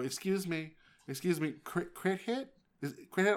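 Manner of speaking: high woman's voice. Retelling what a mom said over game voice chat: imitating a mom on voice chat. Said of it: "this mom on the mic go".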